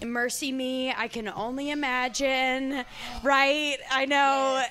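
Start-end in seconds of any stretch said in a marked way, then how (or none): none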